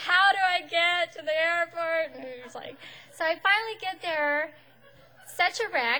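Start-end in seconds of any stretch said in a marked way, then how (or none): 0.0-2.1 play-acted, loud, slow, tearful sobbing. Retelling asking a parking booth attendant for directions, imitating own past sobbing. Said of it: "I'm like sobbing".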